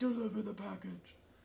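put-on rough, creaky kidnapper ransom-call voice. Wishing viewers could pick stream voices, demonstrating a deep ransom voice. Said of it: "that deep ransom voice where it's like".

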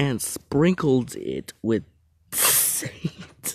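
slow, swooping speech through laughter. Reading funny texts aloud: laughing while talking. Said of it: "when I stop laughing".

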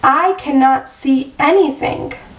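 ordinary delivery

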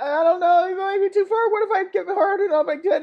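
put-on high, timid, squeaky baby kitten voice. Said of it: "Baby kitty be like".

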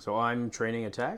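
questioning, rising intonation on "attack". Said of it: "you said that like a question".

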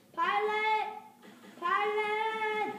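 long stretched yelling. Calling for a pilot to come pick them up, yelling. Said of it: "you were just yelling".

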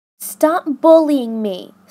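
stern tone. A girl to classmates who hassle her about her clothes: stern. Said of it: "said Ellie sternly".

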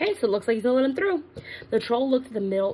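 plain

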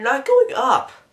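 voice breaking mid-phrase. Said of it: "my voice cracked".

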